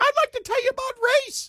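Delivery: put-on prepubescent boy voice. Acting out a pimply-faced barista talking race with customers: imitating a kid who hasn't hit puberty. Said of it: "as you can tell by my voice".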